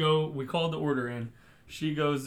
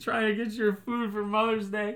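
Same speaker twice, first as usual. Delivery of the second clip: put-on hurt, injured voice, high-pitched. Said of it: "Act like, your head hurts".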